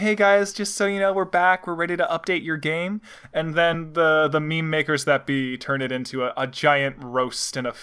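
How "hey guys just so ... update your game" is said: soothing, reassuring, calm announcement voice. Describing a game director's update videos, imitating Jeff Kaplan's calming voice. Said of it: "the nice calming voice".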